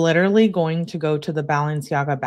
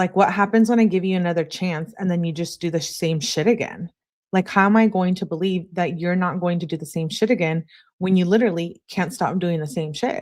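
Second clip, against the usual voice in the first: plain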